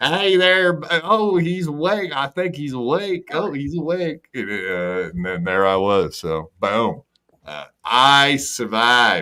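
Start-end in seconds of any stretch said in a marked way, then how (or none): 0.0-4.3 put-on, pitched-up Texas lady's voice. Recalling waking up in hospital, imitating a lady with a Texas accent. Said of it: "some lady with a Texas accent".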